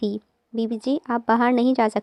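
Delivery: ordinary delivery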